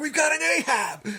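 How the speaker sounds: all excited, high, loud excited shout.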